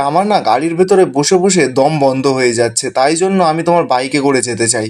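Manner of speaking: ordinary talk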